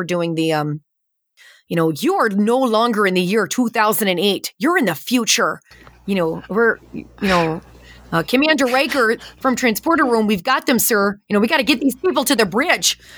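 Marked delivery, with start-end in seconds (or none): 1.9-13.0 put-on Midwestern American accent throughout. Recreating the lines the speaker got in trouble for, in a midwest accent. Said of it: "I got in trouble for that accent".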